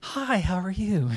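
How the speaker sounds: very high, put-on telephone voice. Showing what the speaker's own phone voice sounds like, in a phone voice. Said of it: "my my my phone voice".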